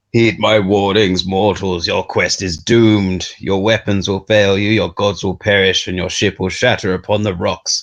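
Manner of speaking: booming, thundering, storm-like voice. Narrating a storm over the listeners' ship as the thunder speaks, voice of the thunder. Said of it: "the thunder becomes a voice".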